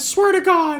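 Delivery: put-on cartoon duck voice. Acting out a Disney character making threats: Donald Duck voice. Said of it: "Donald didn't used to sound like that".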